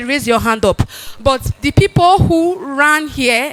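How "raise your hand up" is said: normal talking voice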